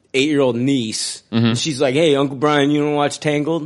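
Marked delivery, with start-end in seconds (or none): 1.9-3.6 talking like from the Bronx. Imagining his eight-year-old niece asking him a question, Bronx accent. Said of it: "why are you talking like you're from the Bronx?".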